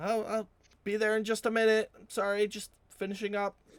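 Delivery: far-off loud, high call. Narrating to listeners who open a shop door, a woman calling out from back. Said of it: "You hear a woman's voice call out".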